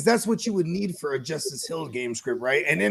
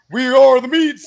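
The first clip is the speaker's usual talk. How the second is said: huge commercial announcer voice, very loud; 6 semitones higher, 12 dB louder than usual. Retelling a TV commercial's big-voiced guy saying his line, in that big voice. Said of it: "the dude with the big ass voice".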